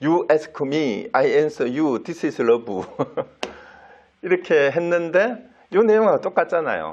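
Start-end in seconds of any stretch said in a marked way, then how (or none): 0.0-2.8 put-on English in a strong Korean accent. Retelling a disciple mimicking his teacher's English reply: Konglish, strong Korean accent. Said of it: "완전 콩글리시로 발음도".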